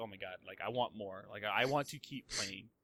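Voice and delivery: ordinary talk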